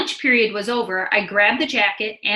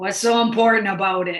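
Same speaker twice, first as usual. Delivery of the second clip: gruff, growling voice. Narrator reads Mister Rumkowski's question about the lost hat, growling. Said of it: "he growled".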